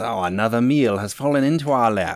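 gleeful, delighted high squeal in monster voice. Running a game, voicing a creature as a player's character goes down, squealing with delight. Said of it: "this creature squeals with delight as it says".

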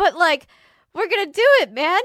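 high, loud, teary, determined voice. Playing a character who starts to tear up: character tearing up. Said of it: "she starts to tear up".

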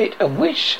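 ordinary delivery, nothing marked

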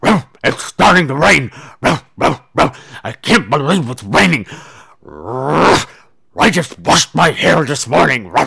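loud, put-on, bulldog-like character voice. Quoting what a woman said about the rain in a bulldog voice. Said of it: "in her bulldog voice, but I'm going to say it".

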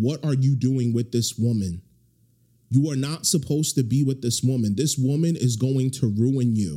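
normal talking voice

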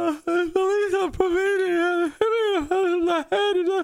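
put-on very high, drawn-out blubbering crying whine. Retelling answering his brother after being hit, imitating own crying and whining. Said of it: "it's me crying and whining".

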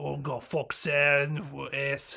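put-on, mumbled British Cockney accent. Imitating an actor's mumbled lines from a movie: mumbled Cockney accent imitating Jason Statham. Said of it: "his goddamn British Cockney accent".

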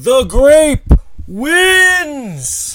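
shrill, booming, very loud, very high arena announcer call. Voicing the announcer as the crowd goes wild: arena announcer calling the winner. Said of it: "And the announcer says".

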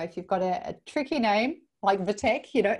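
ordinary talk, nothing marked

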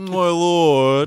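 high, very loud belting, the word lord stretched. Trying out the audiobook narrator's voice for a character: Roy Dotrice's Varys voice. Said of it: "His Varys voice".

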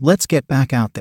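plain reading voice

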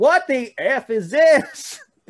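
very high, very loud, very slow hillbilly holler. Retelling what a big trucker-hat fan said: imitating a hillbilly. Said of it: "he just goes".

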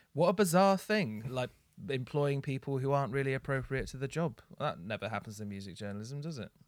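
dry, dripping sarcastic tone. Mocking music journalism for hiring the wrong people: sarcastic. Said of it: "That's sarcasm".

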